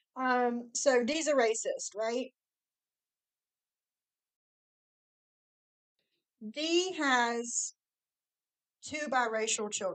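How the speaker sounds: slow speech through a mouthful of food. Host picks back up after excusing the food in their mouth, talking with food in mouth. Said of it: "I got food in my mouth".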